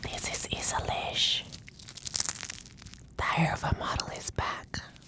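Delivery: whispering. Being filmed while eating for an asmr video, whispering.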